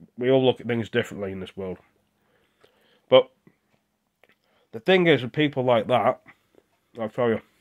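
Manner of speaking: talking with mouth full. Speaking while eating a tuna sandwich, talking with mouth full. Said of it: "I'm sorry, my mouth's full".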